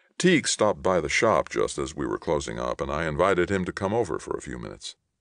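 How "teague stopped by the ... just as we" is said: usual speaking voice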